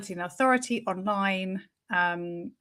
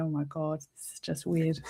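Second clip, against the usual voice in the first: low, hushed talking through laughter; 4 semitones lower, 7 dB quieter than usual. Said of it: "laughing, going".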